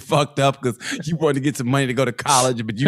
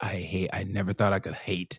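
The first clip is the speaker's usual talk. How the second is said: put-on woman's voice with Ukrainian accent. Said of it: "imitating her voice".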